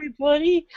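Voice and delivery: exaggerated mock-sarcastic tone.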